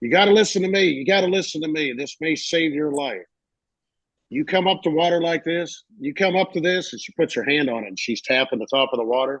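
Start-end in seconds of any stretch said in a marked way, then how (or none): 0.0-6.9 put-on Louisiana Cajun accent, pitched up. Retelling a woman's warning about gators in a video: imitating a Creole Cajun accent. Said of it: "she had a real Creole Cajun accent".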